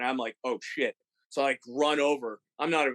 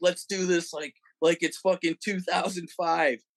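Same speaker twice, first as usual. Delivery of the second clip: mock hollered half-yell, pitched up; 5 semitones higher than usual. Retelling how Martin yelled at the crowd to pocket phones: imitating Martin yelling. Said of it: "he's literally yelling at people".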